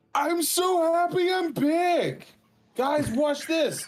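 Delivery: obnoxiously loud, very high, very slow, drawn-out voice. Voicing a hero who cannot tell how loud he is: obnoxiously loud character voice. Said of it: "talking obnoxiously loud".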